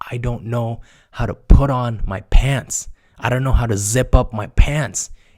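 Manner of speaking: mock exasperated, loud, helpless, frustrated tone. Retelling how a friend complained about his pants: imitating someone frustrated. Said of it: "he's so frustrated".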